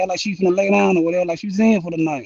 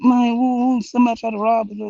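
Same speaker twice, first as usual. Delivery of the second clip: mock crying voice, higher pitch; 4 semitones higher than usual. Retelling a friend's phone call after a robbery: imitating someone crying. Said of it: "she called me crying".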